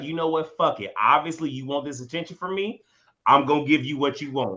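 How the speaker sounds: normal talking voice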